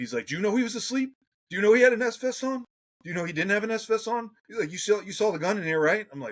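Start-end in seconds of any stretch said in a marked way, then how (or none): 0.3-5.8 imitated scream, higher and louder. Retelling a sergeant confronting him after a raid: imitating a sergeant screaming. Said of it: "in my face scream-, screaming at me".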